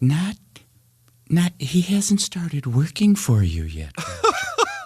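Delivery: very high, sing-song, swooping put-on voice. Retelling an introduction to Groucho, asked to do the voice: imitating Aaron's voice. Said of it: "I have to do Aaron's voice".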